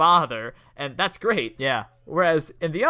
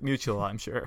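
put-on deadpan, lower and quieter; 6 semitones lower, 8 dB quieter than usual. Recounting a scene, quoting the girl's reply to the father, imitating a deadpan reply. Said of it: "It's such a good deadpan".

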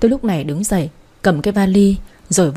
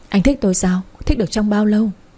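usual speaking voice

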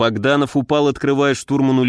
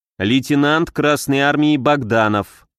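ordinary delivery

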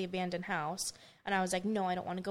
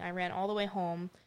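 ordinary delivery

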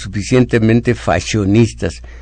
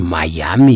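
put-on, exaggeratedly smug, self-satisfied, relishing delivery; 5 semitones lower than usual. Mocking how upper classes say Miami, mock-smug 'Miami'. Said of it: "haciendo los gestos en la boca de mucha satisfacción".

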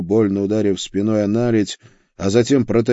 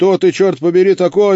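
very high, loud exclaimed outburst; 10 semitones higher, 6 dB louder than usual. A lion cub, knocked down by an unseen blow, exclaiming. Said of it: "воскликнул львенок".

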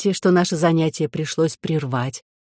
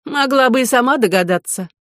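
smirking, mocking, through gritted teeth, much higher; 7 semitones higher than usual. A princess answers her relative's silent question; smirking, through gritted teeth. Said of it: "с усмешкой процедила Елизавета".

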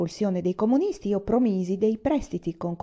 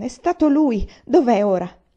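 sudden, loud exclamation; 3 semitones higher, 6 dB louder than usual. Yuan asks his father where the man is now, exclaiming. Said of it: "esclamò Yuan".

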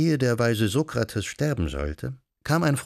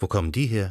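usual speaking voice

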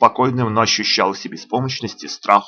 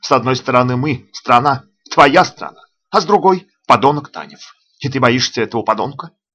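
ordinary delivery

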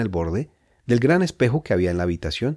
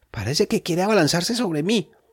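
shaky, quavering, trembling voice, pitched up; 9 semitones higher than usual. Facing a dog with bared teeth and bristling fur, speak in a trembling voice. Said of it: "dijo Edgar con voz temblorosa".

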